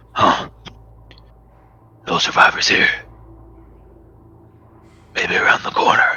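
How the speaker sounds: gargled, strange voice. Narrating a scene, voice the one who comes upstairs in a gargled, strange voice. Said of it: "His voice kind of like gargled and strange".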